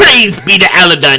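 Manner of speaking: very loud, high, belted preaching cry. Voicing a priest that sounds like Mister Krabs. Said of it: "an Aladdin priest that sounded like Mister Krabs".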